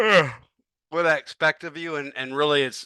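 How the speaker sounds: talking through a yawn. Going over chapter twenty with listeners, yawning while talking. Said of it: "I'm sorry I keep yawning".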